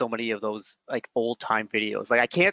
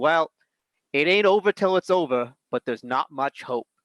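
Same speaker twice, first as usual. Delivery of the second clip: put-on Boston-accented sports announcer; 4 semitones higher than usual. Retell what Ron said during a lopsided match, in Ron Partridge's Boston accent. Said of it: "you got Ron's Boston accent too".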